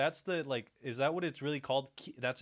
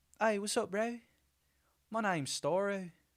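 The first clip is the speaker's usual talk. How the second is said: attempted New Zealand accent, pitched up; 7 semitones higher than usual. Trying the accent again after failing once: attempted kiwi accent. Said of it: "I'm gonna try it again".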